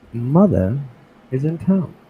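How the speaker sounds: put-on, bouncy, slow, drawled-out English voice. Showing what the character Victoria's voice would be like: Victoria's put-on English voice. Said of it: "I used a hippity hoppity fucking English voice".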